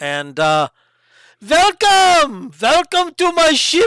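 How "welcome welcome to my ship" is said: loud, very high, fake French accent. Voicing a ship captain greeting the party: put-on French accent. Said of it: "That's your French".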